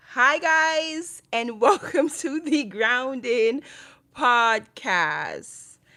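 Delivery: very loud, very slow, upbeat and lively delivery. Starting the podcast welcome over after a sigh: more lively. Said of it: "I need to say that with a little more live".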